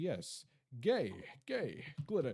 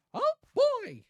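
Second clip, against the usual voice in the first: very high, loud cartoon squeak; 11 dB louder than usual. Trying it despite having just strained the voice: Mickey Mouse impression. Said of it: "I could do a pretty decent Mickey Mouse impression".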